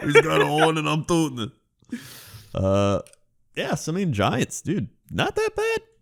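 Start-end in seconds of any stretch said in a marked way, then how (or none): 0.0-2.0 put-on New York accent, higher and louder. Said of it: "the most New Yorker I think I've ever heard you sound".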